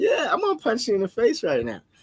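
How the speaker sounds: sing-song, friendly menacing tone. Retelling saying aggressive words to someone while smiling: imitating saying threats while smiling. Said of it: "because you're sitting there smiling".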